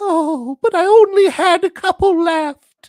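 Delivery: very high, very loud, drawn-out pleading. Voicing a wallet that begs its owner to stop spending: mock pleading wallet. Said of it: "says the wallet to the man".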